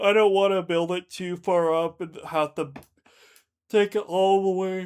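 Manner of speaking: yawning while talking. Narrating a block-building session, yawning while talking. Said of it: "Sorry, I'm yawning so much".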